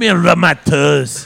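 put-on ogre voice. Joking that someone sounds like Shrek, the speaker does a Shrek voice. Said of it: "sounds like Shrek".

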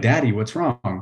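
put-on tearful crying child voice. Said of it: "she started crying".

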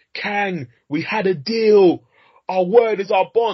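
very high, overblown, drawn-out screaming. Criticizing a film's line delivery, the speaker imitates Scott screaming at Kang. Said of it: "he's screaming like".

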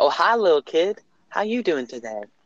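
very soft, sweet, kind, gentle tone. Retelling a man in a store greeting the speaker as a kid, imitating a soft, nice tone. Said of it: "softest, nicest tone ever".

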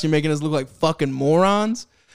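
normal talking voice

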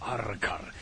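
low villain voice. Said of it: "Es de villano".

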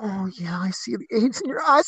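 whispering, hushed voice under the breath. Retelling what a friend said in a store aisle: imitating someone whispering. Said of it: "He's whispering".

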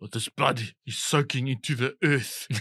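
put-on South African accent. Imitating Leonardo DiCaprio's accent in Blood Diamond: Leonardo DiCaprio's Blood Diamond South African accent. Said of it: "A Leonardo in Blood Diamond".

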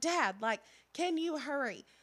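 frantic, terrified scream. Retelling yelling for dad to hurry about a snake: imitating herself screaming.

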